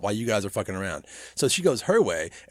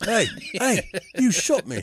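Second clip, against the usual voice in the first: sudden put-on English accent, slow and high; 8 semitones higher than usual. Retelling a wounded hermit's line from a film: imitating a sudden English accent. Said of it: "why does he get an English accent all of a sudden".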